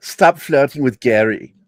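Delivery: put-on Austrian accent on English. Retelling an encounter, the speaker mimics an Austrian woman, imitating Austrian accent. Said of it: "Her her accent".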